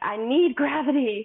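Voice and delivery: put-on exasperated half-yell. Retelling pushing during labour too long: retelling a yell. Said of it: "yell. ... I'm like".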